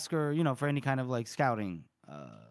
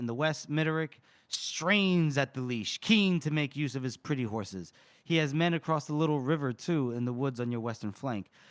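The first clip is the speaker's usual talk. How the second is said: usual speaking voice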